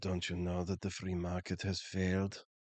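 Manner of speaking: low, hushed, sultry yet combative voice. Retelling what a woman said after sitting down beside him: mock-sultry, aggressive voice. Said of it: "in like the sexiest voice but like very aggressive".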